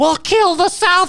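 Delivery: very high, unhinged, crazed newsreader announcing voice. Imitating the north korean news lady: imitating a crazed newsreader. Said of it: "she's all crazy".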